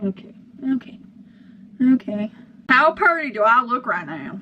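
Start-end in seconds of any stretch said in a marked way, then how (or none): 2.7-4.4 Southern American accent with twang. Speaker asks a question in a southern accent that just slipped out. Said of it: "I just had a southern accent there".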